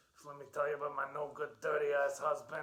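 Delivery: put-on loud, old-school Brooklyn accent, old lady voice. Introducing a character to a co-host, talking as her, Edna voice. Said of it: "She talks like this".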